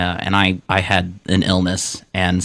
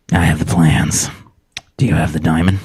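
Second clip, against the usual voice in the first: whispering creepily; 3 semitones lower than usual. Playing someone who whispers odd lines to strangers: creepy whisper to a stranger. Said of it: "I really like to whisper these things to complete strangers".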